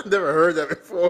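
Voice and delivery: high, loud, hard laughing through the words.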